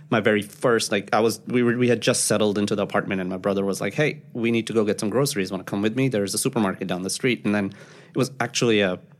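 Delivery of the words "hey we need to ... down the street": plain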